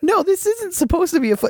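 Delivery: very high, fast, squeaky voice of mock disbelief.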